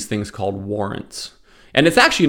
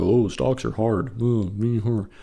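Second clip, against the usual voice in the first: mocking complaining tone, much quieter; 4 dB quieter than usual. The speaker mocks people who buy high and sell low by imitating them, mocking complainers. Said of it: "It's mocking all the people".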